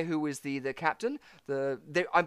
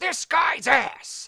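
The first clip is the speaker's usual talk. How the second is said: very high-pitched narrator voice; 10 semitones higher, 4 dB louder than usual. Retelling a narrator's tangents from a show: Gilbert Gottfried impression. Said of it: "That is a great impression".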